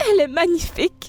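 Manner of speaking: close to crying. After a marriage proposal is accepted, a character speaks, tearful. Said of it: "arrête de pleurer".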